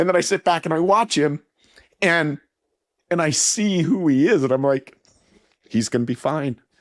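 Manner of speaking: choked-up voice catching with emotion. A father talking about his son, who just had a little girl, choked up and emotional. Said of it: "I'm getting emotional".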